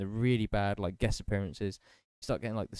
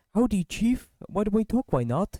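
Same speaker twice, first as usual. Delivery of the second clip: terrible put-on American accent, very high and shrill; 12 semitones higher, 7 dB louder than usual. Retelling a cartoon scene where China answers the phone, really bad American accent. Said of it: "trying to do like really bad like American accent".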